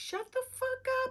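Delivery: very high, shrill, shrieking scream. Recalling how their mother used to scream at them; imitating mother screaming. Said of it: "my mother would be screaming at us like".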